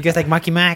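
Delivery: mock put-on Boston accent. Mocking how someone will start talking after moving, in a mock Boston accent. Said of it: "he has like an accent".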